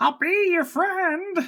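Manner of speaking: very high, slow, overdone, horrible drawl. Mock an actor's voice in Suicide Squad, doing the horrible Suicide Squad Joker voice. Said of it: "that horrible voice he was doing in Suicide Squad".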